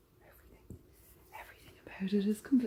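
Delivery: hushed whisper under the breath. Sliding an item out of its box and admiring it, whispering. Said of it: "I don't know why I'm whispering".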